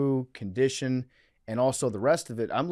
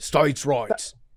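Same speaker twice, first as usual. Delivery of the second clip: fake, put-on Australian accent, louder; 4 dB louder than usual. Playing an Australian Southerner for laughs: put-on Australian accent. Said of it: "I'm Australian Southerner".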